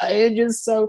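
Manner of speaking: crocodile-tears sob, pitched way up. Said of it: "raises the tone of her voice".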